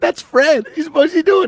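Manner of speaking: high-pitched talk broken by helpless giggling laughter. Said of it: "laughing his ass off".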